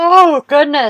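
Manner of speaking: talking through a very loud, high, stretched yawn. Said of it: "I'm yawning at you guys".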